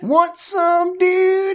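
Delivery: dude voice, pitched very high. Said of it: "someone was gonna turn around".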